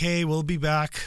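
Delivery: plain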